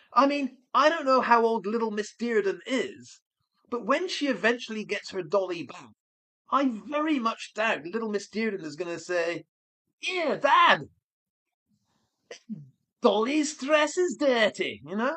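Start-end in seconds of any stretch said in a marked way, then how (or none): 9.9-14.8 put-on slow, light Liverpool Scouse accent. Imagining what a little girl will say to her dad, in a bit of a Scouse accent. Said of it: "that's a bit of a Scouse accent".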